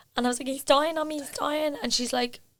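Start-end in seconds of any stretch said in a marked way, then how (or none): 0.5-1.8 high, put-on voice forced out through tears. Retelling answering a woman after collapsing in the hall, imitating own crying. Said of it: "And I'm crying".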